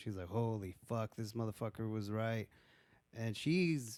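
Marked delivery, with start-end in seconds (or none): 0.3-2.5 put-on panicked, freaking-out voice. Retelling how a character reacts on finding the back rooms: imitating someone freaking out. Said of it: "she's freaking out".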